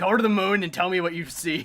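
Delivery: jeering, taunting tone. Retelling what a launched enemy was told: imitating a taunt to an enemy. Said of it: "It's like".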